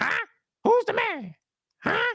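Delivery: squeaky, nasal, taunting huh pushed through the nose. Retelling Scott flexing before his push-ups, in a squeaky Scott impression. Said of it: "squeaky voice with it".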